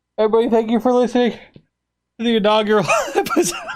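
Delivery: high speech through tears of laughter. Wrapping up the episode while laughing hard: laughing while talking. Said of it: "I need to stop crying".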